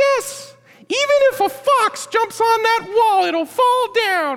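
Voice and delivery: very high, tiny, little henchman voice. Retelling the taunt of the enemy's minion guys, in a little minion voice. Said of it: "remember I made the little voice of the minion guys".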